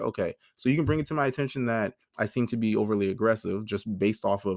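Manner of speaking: ordinary talk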